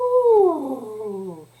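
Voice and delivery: high, loud, big sighing ooh. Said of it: "So you could do a big sigh like".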